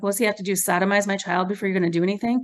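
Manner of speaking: ordinary talk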